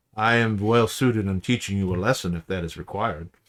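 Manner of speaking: put-on heavy, thick Romanian vampire accent. Voicing the figure answering a player's vampire guess: thick Romanian accent. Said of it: "he has a very thick Romanian sort of accent".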